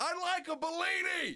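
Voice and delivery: very high, shrill, mock yell. In a rowdy biker bar story, the speaker re-enacts ordering a drink, retelling a scream. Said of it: "I scream over the top of all these".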